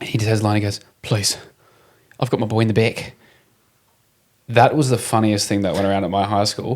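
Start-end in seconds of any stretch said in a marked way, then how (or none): 1.0-3.1 put-on New Zealand accent, pleading tone. Recalling a safe-driving video line that became a school joke, imitating a pleading Kiwi actor. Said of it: "it was a Kiwi actor".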